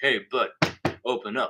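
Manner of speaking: deep, low-pitched voice. Retelling a prank heard from a bathroom stall: imitating a low voice. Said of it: "All I hear is this low voice".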